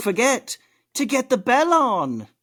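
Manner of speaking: very high, clumsy Australian accent, swooping pitch. Gaming podcast host reminding viewers to get the bell, in a bad australian accent. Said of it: "I can't do an Australian accent".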